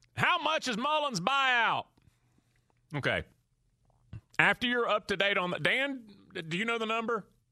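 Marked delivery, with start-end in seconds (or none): 0.2-1.9 angry Southern accent, pitched up. Scripting a question for the Gators fan base: angry Southern accent. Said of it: "this is said in an angry Southern voice".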